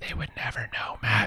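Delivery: hushed whisper. Joking that listeners of an audio-only podcast cannot see them: whispering. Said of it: "Sorry, I'm whispering".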